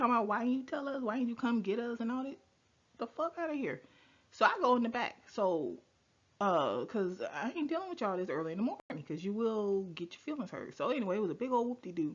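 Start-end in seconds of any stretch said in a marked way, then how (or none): 0.3-2.0 mock yelling, higher and louder. Retelling how daughters complained at a surgery door: imitating daughters yelling. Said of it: "they yelling at me".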